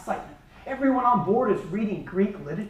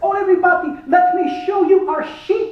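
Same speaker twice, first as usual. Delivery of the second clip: bad put-on Greek accent, loud and high; 8 semitones higher, 5 dB louder than usual. Retelling what the man who drove the group to the port said: terrible Greek accent. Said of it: "this is a terrible Greek impersonation".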